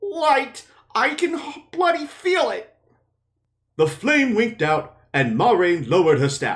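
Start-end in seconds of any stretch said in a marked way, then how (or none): 0.0-2.7 trembling, quivering, very high frightened voice. Reading a passage aloud, the narrator voices Matt, voice quivering.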